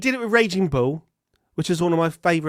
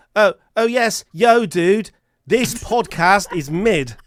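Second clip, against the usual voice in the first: put-on slow, deliberate voice with an English accent; 2 semitones higher than usual. Imitating an English person trying out American slang: English person putting on American slang. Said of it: "an English person going".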